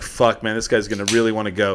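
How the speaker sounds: ordinary talk, nothing marked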